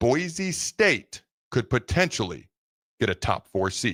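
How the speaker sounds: drawn-out, deliberately slow, careful word-by-word speech. Show host telling listeners something before a break, speaking slowly. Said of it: "let me speak slowly".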